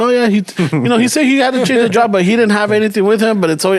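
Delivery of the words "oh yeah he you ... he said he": ordinary delivery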